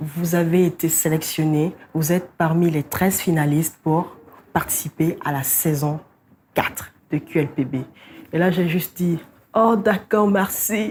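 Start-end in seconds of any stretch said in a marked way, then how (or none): 9.5-10.9 croaky, hoarse, broken-voiced. Recalling answering the call saying she was a finalist, retelling with a cracked voice. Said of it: "avec une voix cassée".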